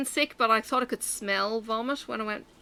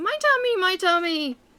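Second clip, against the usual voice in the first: put-on high, screaming child's wail; 9 semitones higher, 4 dB louder than usual. Retelling the child kicking off a second time: imitating a child screaming.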